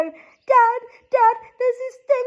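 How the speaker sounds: very high, tearful, sobbing speech, acted out. Retelling calling out to Dad after the spirit box, retelling own sobbing. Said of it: "and I'm like sobbing".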